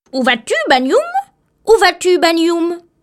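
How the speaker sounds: teasing, jeering, taunting parrot-like voice. Narrator reads a parrot calling out to banyum in the bush, mocking voice. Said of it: "une voix moqueuse l'interpeller".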